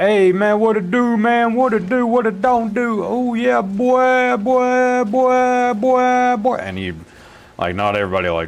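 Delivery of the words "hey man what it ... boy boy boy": put-on very high, slow American slang, "boy" stretched out. Imitating how some people talk in American videos: imitating how some Americans talk. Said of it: "you see some people talking like".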